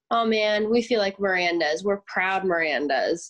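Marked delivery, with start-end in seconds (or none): none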